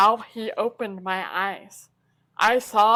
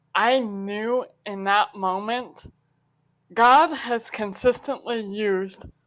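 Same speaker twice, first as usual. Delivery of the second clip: ordinary talk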